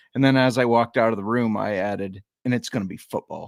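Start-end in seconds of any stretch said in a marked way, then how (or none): 2.5-3.5 acted, businesslike, matter-of-fact, not-up-for-debate tone. Speaker recalls adding a remark to her while walking out of the room: retold matter-of-fact tone. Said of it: "it came across as very matter of fact".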